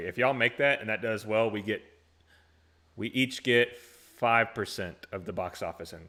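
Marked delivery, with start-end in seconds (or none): none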